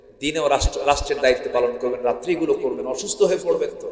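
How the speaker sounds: ordinary talk, nothing marked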